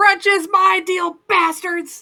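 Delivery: high, very loud, drawn-out scream. Voicing a character screaming across a courtyard: screaming. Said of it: "Calandra just screaming out".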